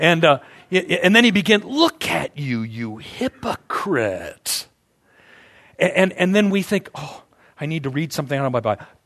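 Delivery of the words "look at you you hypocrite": put-on snake voice, slower. Retelling someone's accusation of hypocrisy, in a snake voice. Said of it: "snake voice".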